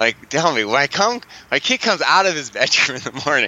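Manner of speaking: speech broken up by laughing. Retelling a client's question from an online session, laughing while talking. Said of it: "I'm laughing right now".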